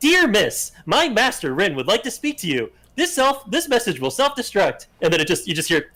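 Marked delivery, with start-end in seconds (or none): 0.0-4.9 high, tinny voice squeezed through a tiny speaker. Retelling a message that suddenly plays from a little speaker, voice from a little speaker. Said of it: "with like a little speaker, it goes".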